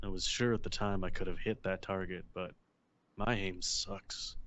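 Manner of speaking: grumbling to oneself. Voicing a character who stares down a shooting range: muttering under his breath. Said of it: "under his breath is saying".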